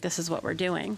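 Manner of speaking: ordinary delivery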